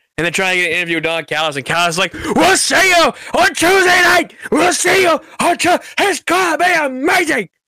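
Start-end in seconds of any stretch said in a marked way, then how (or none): 2.1-7.5 put-on very high, hyped-up, overexcited gushing. Retelling Don Callis calling after a new champion, as an overexcited Don Callis impression. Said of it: "Don, calm down, my guy".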